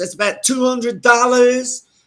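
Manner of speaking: put-on New York accent. Retelling what she quoted for a ride around the block, in a New York accent. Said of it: "I'll give you the New York accent".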